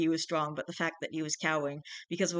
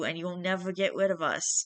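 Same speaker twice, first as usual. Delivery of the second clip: ordinary delivery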